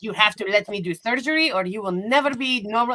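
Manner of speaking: put-on heavy, laid-on European accent, insistent tone. Retelling a woman who insisted on surgery, in a thick European accent. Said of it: "some sort of thick European accent".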